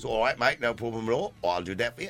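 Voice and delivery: put-on London-accented English speech. Retelling a line while doing a Michael Caine London accent impression. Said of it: "Michael Caine impression".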